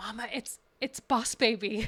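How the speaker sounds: mock child's whisper. Mother retells her kid whispering to her at a choir concert, retelling a child's whisper. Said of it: "he whispers".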